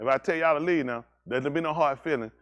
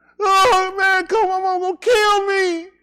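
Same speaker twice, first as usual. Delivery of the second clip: very high, very loud fake crying and sobbing; 10 dB louder than usual. Acting out a car thief who doesn't want jail: mock crying while pleading. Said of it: "I'm crying".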